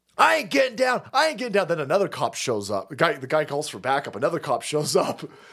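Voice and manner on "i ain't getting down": mock screaming man, higher, faster. Retelling cops ordering an ATF agent to the ground; imitating a screaming man. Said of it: "the ATF guy starts screaming".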